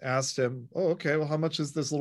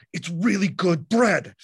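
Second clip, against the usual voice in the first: play-acted rigid, dead-serious, intense, raised voice; 4 semitones higher, 6 dB louder than usual. Retelling what a bread seller said: imitating an intense, stiff man. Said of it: "he was so intense... kinda stiff".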